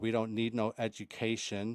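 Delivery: plain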